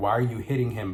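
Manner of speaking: plain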